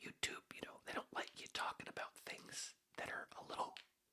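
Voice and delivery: breathy, hushed whisper, very quiet, barely there. Explaining what YouTube doesn't like people talking about: whispering. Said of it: "Why am I whispering?".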